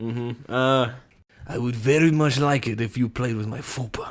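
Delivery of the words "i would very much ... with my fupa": put-on Russian accent in English. Player drew Russian in an accent game and says a line in a Russian accent.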